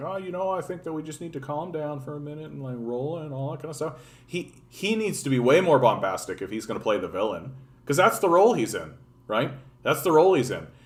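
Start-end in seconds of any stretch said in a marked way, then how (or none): 0.0-3.9 very quiet, soft, plain talk. Imitating how a politician talks plainly to the media: imitating Joe Manchin speaking plainly. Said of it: "he speaks very much like this".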